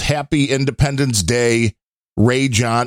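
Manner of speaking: usual speaking voice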